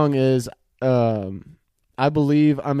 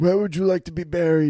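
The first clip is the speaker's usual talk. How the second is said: rough-throated, raspy, hoarse gangster voice; 4 semitones higher than usual. Playing a mob boss in a made-up scene with the other player: raspy voice. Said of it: "This is not a mobster accent. It's just raspy".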